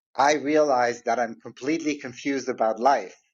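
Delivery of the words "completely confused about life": ordinary talk, nothing marked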